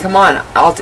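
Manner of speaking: ordinary talk, nothing marked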